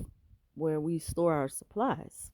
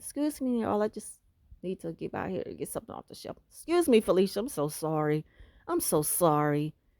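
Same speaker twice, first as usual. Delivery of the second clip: silly put-on sweet little goody-goody voice. Mocking a woman's fake kind act at the shelf, stupid little put-on voice. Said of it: "just that stupid little voice they put on".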